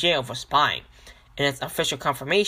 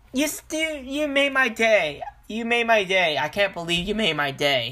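ironic, sarcastic, pretend grateful tone; 7 semitones higher than usual. Responding to a quoted remark about supporting the government, sarcastic. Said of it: "I'm being sarcastic".

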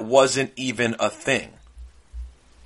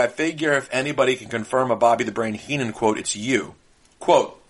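ordinary talk

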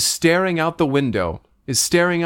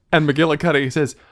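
usual speaking voice

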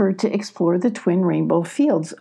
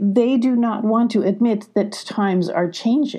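ordinary delivery

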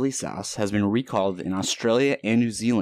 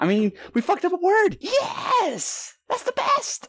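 put-on very high, excited squealing shout, stumbling over word. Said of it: "I sound like fucking, um, Crystalia".

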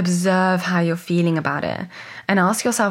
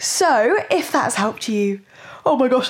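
yawning while talking, much higher; 6 semitones higher than usual. Recording on a Friday morning, talking through a yawn. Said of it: "I'm mid-yawn".

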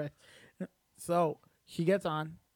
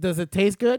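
mock, very loud, snide, sarcastic tone; 3 semitones higher, 10 dB louder than usual. Recounting questioning her after she ate the slice, retelling a sarcastic question. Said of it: "I was being like sarcastic and I was like".

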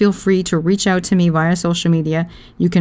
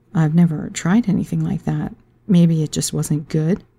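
sultry, seductive, sexy put-on character voice. Speaker switches into the Mona voice: sexy Mona voice. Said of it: "That's my Mona voice. It's pretty sexy".

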